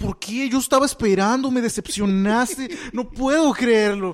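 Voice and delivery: high, loud, tearful speech, sobbed out. Retelling what a woman said to the speaker: imitating someone crying. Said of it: "pero en llanto".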